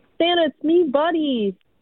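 slow, stretched-out, drawn-out called yell. Recalling passing a mall Santa, the speaker retells her yelling at him. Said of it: "she yelled out".

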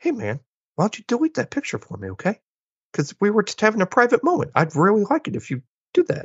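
very high, sing-song voice, done badly. Retelling a movie scene, doing a horrible Mark Wahlberg impression. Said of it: "Horrible Mark Wahlberg impression".

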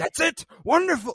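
very high, loud, delighted teacher voice.

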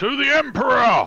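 very loud, high, shrill drill sergeant bellow. As the table joins the clapping, a player leads the toast: bellowing drill sergeant voice. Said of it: "bellow out in proper drill sergeant voice".

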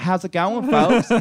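put-on very high male voice, Southern accent.

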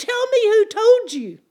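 intimidating yell, very loud and high. Speaker retells a man yelling at him nose to nose: retelling a yell. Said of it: "he's yelling at me".

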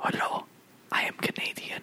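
hushed, reverent-sounding, barely voiced whisper. Imitating Denis Villeneuve as the voice of God: whispering as Denis Villeneuve. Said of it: "Denny Villeneuve just whispering".

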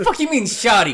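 put-on girl with attitude. Imitating a girl offended at being called shawty: imitating a girl catching an attitude. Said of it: "catch an attitude real quick".

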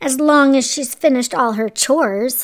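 ordinary delivery

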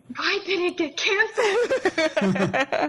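mocking voice, high and slow. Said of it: "you're like this".

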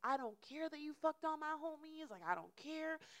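play-acted, worked-up, high-pitched screaming rant. Retelling a late-night argument outside: imitating someone screaming. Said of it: "because you're screaming about it".

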